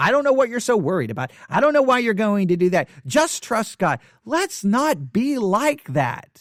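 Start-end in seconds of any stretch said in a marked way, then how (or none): 0.0-4.0 fast, patronizing, dismissive, condescending tone. Mocking Christians who just say trust God, in a mock condescending tone. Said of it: "say it in this condescending tone".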